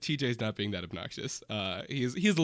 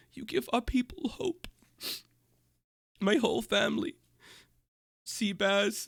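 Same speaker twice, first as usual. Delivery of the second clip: very high voice, on the verge of tears; 10 semitones higher than usual. Retelling what a man said while hugging her, imitating someone about to cry. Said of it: "looks like he's about to start crying".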